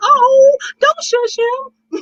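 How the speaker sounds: pleading cry, wailed high and slow.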